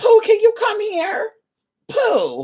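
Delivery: put-on high sing-song granny voice. Mocking a term by imitating a grandmother calling a baby: imitating a grandmother calling a baby. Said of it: "a grandmother calling her little baby girl poo".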